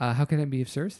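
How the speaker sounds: put-on nice, sweet voice. Retelling how the phone was answered on a call; Nancy's nice sweet voice. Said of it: "a nice sweet voice answers and goes".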